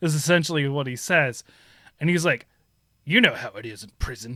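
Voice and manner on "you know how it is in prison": put-on gruff soldier voice. Retelling a game character's prison line in a gruff voice, like Solid Snake. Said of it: "He's got that, like, gruff, like, "Er" voice".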